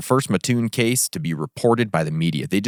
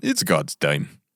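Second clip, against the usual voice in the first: lower-pitched put-on Russian accent; 7 semitones lower than usual. Joking with a friend, speaker says the line in a Russian accent. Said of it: "with a Russian accent".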